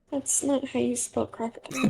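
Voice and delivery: quiet, low, hushed aside muttered under breath. Retelling a woman's reaction to a misspelling, mock-muttering under her breath. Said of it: "under her breath, really quietly".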